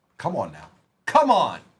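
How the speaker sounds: worked-up, excited, eager, urging outburst. Calling out player names and getting caught up in one, excited outburst. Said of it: "I got a little excited".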